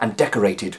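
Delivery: plain reading voice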